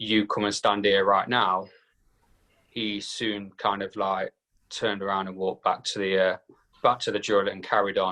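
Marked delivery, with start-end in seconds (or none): 0.0-1.7 stern, commanding, scolding father voice. Retelling ordering someone who stormed off to come back, in a put-on dad voice. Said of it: "as soon as I put on my dad voice".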